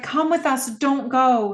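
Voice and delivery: mock crying, high, tearful, desperate pleading tone. Retelling a scene where a girl grips a man's sleeve; imitating a crying plea. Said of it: "And he's crying and she's crying".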